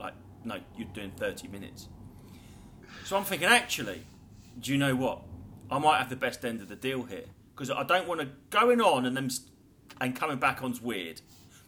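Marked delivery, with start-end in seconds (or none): 0.4-1.9 mock dead-level, expressionless, low, quiet deadpan. Speaker retells answering the booker about set length: retelling a deadpan reply. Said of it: "just deadpanned it".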